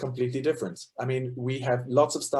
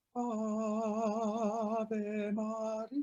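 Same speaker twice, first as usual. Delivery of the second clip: slow, soft, airy falsetto. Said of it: "it sounds very airy, like this".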